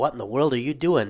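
plain

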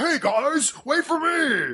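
acted huge man voice, pitched very high. Trying to recall a giant Muppet's name, the speaker does a Carl from the Muppets impression. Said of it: "the giant big guy who talks like this".

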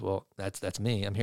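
acted bashful, sheepish voice, low and soft. Retelling how the drummer answered when asked who the drummer was, retelling a sheepish reply. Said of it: "he sheepishly says".

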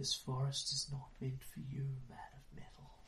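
very quiet, airless, breathless, unearthly, inhuman whisper. Game narrator voicing a voice from the trees, breathless, inhuman whisper. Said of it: "A breathless, inhuman whisper rustles through the trees".

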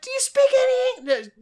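very high, put-on woman's voice. Retelling what a woman said to the garage attendant, in a high voice. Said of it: "is this high voice".

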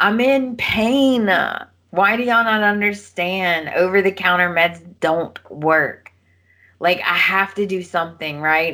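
tearful pleading voice, crying. Retelling a soap scene where a character starts crying. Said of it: "she starts crying and she's like".

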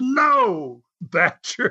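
put-on high yelp, cried out, "no" held long. Retelling what another man said during a match: imitating someone screaming. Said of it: "he screams".

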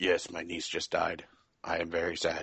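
deadpan, flat monotone with zero feeling. Mocking a game protagonist's voice acting, imitating his flat emotionless delivery. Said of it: "No emotion ever shows on the face or the voice".

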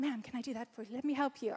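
put-on American accent, helpful and obliging. Quoting someone offering to help her in the kitchen, in an American accent. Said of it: "Do my American accent".

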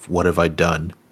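quiet whisper. Voicing a character who looks at the container and whispers to himself: whispering to himself. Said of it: "he just whispers to himself".

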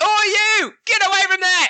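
very high, shrill, high-pitched yell. Voicing a Duragar who yells from the back of the chamber: yelling. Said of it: "He yells from the back of the chamber".

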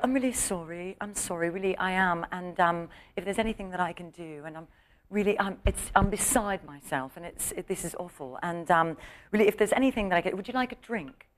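soft, sickeningly sweet put-on British accent. Retelling what a very nice woman said, imitating her british accent. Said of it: "she had that British accent. She's like".

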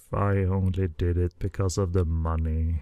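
muttered under breath. Retelling an interview moment, imitating Anthony Wong muttering under his breath. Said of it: "sort of under his breath".

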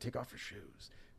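very quiet, breathy, barely voiced whisper. Retelling a film scene where a man in bed warns another: imitating someone whispering. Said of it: "he's trying to whisper".

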